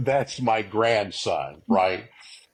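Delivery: plain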